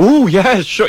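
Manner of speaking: high, delighted, caught-off-guard surprised tone. Retelling a celebrity asked for an autograph: imitating Elayne Boosler, pleasantly surprised. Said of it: "so surprised somebody wanted an autograph".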